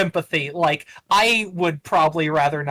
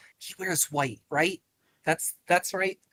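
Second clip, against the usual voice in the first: soft, breathy, hushed half-whisper aside; 7 dB quieter than usual. Voicing a character who looks up at Lydian: half-whispering. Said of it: "kinda whispers".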